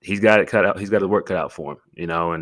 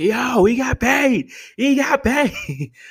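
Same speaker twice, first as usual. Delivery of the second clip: mock, very high, stretched-out celebratory yell; 4 dB louder than usual. Recalling the news that a player got paid, in a crosswalk, retelling own screaming. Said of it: "So I'm screaming".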